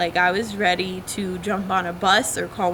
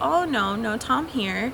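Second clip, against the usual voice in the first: fake Spanish accent, slow and drawn out; 4 semitones higher than usual. Acting out a man's reply when asked where Tom is: put-on accent. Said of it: "using this accent".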